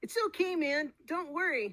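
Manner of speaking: very high, very slow, stretched, reassuring tone. Trying the voice another speaker described: Morty and Cheech Marin mix. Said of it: "Let me see".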